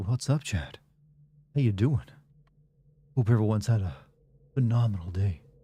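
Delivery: low, breathy, seductive, sexy voice. Greeting a returning chatter and everyone, in a breathy sexy voice. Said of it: "I'm using my sexy voice tonight. ... sexy voice me is just breathy".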